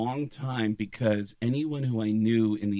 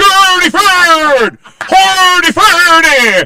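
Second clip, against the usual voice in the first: very high, very loud, drawn-out babbling; 21 dB louder than usual. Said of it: "I'm doing the chef from the Muppet Show".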